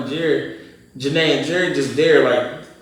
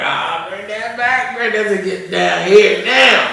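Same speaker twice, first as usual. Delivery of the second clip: words broken up with laughter, pitched up; 6 semitones higher, 4 dB louder than usual. Retelling what he said to the others back then, imitating himself laughing while talking. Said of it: "I'm laughing like".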